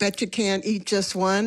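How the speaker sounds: ordinary delivery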